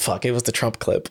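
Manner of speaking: ordinary talk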